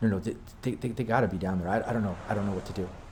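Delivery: quiet, soft, argumentative half-whisper. Speaker retells two voices overheard arguing, now the female one, imitating half-whispered arguing. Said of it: "just slightly like whisper arguing".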